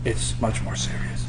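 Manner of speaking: soft, unvoiced whisper.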